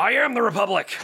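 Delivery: high, loud, all-out bellowing, cornered-sounding yell. Imitating Alex Jones when he's cornered: Alex Jones yelling impression. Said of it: "he just starts yelling".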